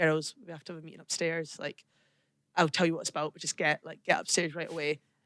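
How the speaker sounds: low, dead-straight, poker-faced deadpan delivery. Retelling how the captain called the players to a meeting: imitating a deadpan announcement. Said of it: "absolutely deadpan".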